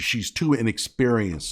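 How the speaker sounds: normal talking voice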